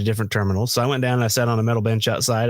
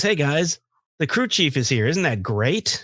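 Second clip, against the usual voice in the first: snarky, fake-cheery, swooping, sarcastic announcer voice; 4 semitones higher than usual. Retelling the pilot announcing the crew chief arrived: imitating a sarcastic, annoyed pilot. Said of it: "That pilot was pissed".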